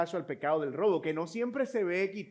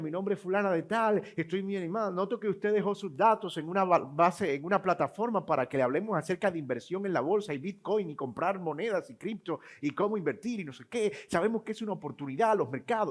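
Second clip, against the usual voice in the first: plain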